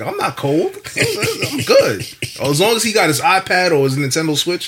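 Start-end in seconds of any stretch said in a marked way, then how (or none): 0.0-2.0 put-on very high, slow, drawn-out, swaggering tough-kid voice. Retelling a son who insists he is not cold: imitating son acting tough. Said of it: "He trying to thug it out like".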